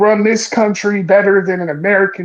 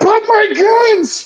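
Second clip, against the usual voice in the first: very shrill, very high, loud, sudden yell; 14 semitones higher than usual. Mocking a reply to worries that kids are in danger: imitating someone loudly shouting. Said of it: "you had to loudly shout".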